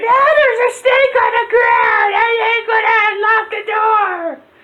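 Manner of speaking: put-on, very high-pitched, terrified, panicked shrieking scream. Retelling how a man locked in the bathroom reacted: imitating a man screaming. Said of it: "He's screaming".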